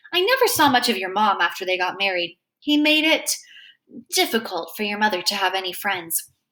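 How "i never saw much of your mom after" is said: ordinary delivery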